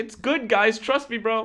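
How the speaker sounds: acted high desperate pleading. Reacting to comments, acting out him desperately insisting, mock-desperate pleading. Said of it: "you can see him desperately being like".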